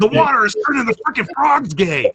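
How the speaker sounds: very high, ranting talk-radio host voice. Someone has just asked to hear your impression, so do an Alex Jones impression. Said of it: "I just want to hear your impression now".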